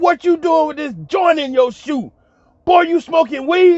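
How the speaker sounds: put-on, high-pitched hollering. Retelling what a man hollered on finding a joint in their shoe; retelling a man hollering. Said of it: "he hollered out".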